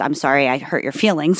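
ordinary talk, nothing marked

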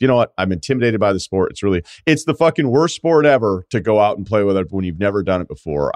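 plain

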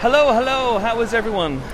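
loud, very high yelling. Greeting the hosts on joining the podcast: yelling a greeting. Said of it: "which is why I just yelled".

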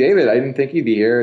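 ordinary talk

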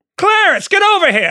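put-on high, old-timey transatlantic movie accent, called out. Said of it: "Who talks like that?".

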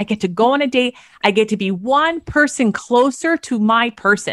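excited, upbeat, enthusiastic, eager delivery. Advising daters how to frame going on a date, enthusiastic voice. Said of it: "in this enthusiastic voice".

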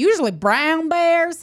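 broad put-on Southern accent, laid on thick. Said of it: "he's got a thick Southern accent".

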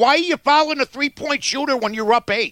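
mock fed-up, exasperated shouting. Acting out shouting at a basketball game on tv: imitating shouting at the tv. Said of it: "you're up shouting at the T V".

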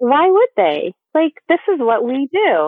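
openly sarcastic, slow, swooping pitch. Answering a complaint that no one explained scar care after birth: sarcastic tone. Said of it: "I'm being sarcastic".

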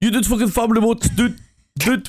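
very high-pitched, fed-up griping. Retelling meeting a famous streamer, doing an xQc impression. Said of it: "in my best X Q C impression".

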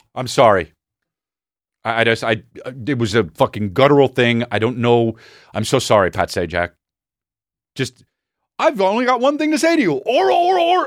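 put-on flustered, nervous stammering. Acting out apologizing to Pat Sajak after an imagined hit: put-on flustered stammering apology. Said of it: "I'd be like this".

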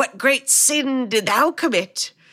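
slow, raspy, scratchy British voice. Retelling a lady who runs up to give directions, in a scratchy British voice. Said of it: "scratchy, like British delivery".

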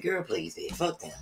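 blunt, all-or-nothing, no-middle-ground delivery. Retelling how a friend imitates the speaker: Sherry imitating the speaker. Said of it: "Sherry imitates me. I'm like".

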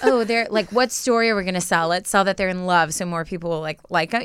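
ordinary talk, nothing marked

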